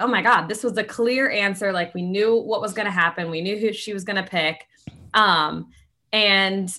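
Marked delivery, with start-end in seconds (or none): none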